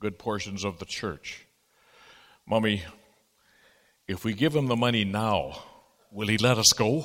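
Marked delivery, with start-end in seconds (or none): 2.5-7.1 put-on small, childlike, carrying little girl voice. Speaker retelling a little girl's remark during a long sermon, in a little girl voice. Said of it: "said in a little girl voice".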